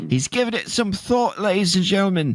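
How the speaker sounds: fake, put-on British accent. Commentating on a player giving it some thought, put-on british accent. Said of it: "That's my British accent".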